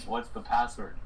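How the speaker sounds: usual speaking voice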